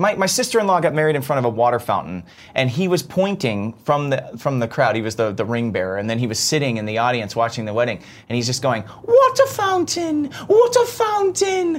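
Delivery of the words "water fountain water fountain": put-on toddler British accent, much higher, slower. Retelling a two-year-old calling out at a wedding, toddler's British accent. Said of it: "water and fountain in a British accent".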